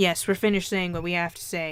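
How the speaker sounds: ordinary delivery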